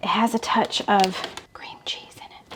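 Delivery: secretive hushed whisper, barely voiced, very quiet. Talking through a dinner recipe, keeping it from her husband, whispering. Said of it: "If you don't know why I'm whispering".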